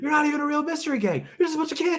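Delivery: acted, frantic, very high-pitched freaking-out yell. Acting out the sheriff yelling at the mystery gang: imitating a sheriff yelling. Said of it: "Just freaking out on him".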